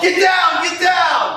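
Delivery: play-acted very high, drawn-out shout. Retelling an audition where he yelled the line: retelling a yell. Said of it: "and I yelled".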